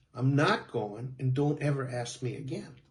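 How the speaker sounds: ordinary talk, nothing marked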